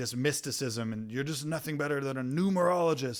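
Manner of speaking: scornful, contemptuous, disdainful, dismissive delivery. Retelling what a film character says to Max: imitating a disdainful remark. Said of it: "And he says it with disdain".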